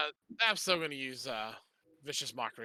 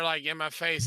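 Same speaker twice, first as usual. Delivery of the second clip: usual speaking voice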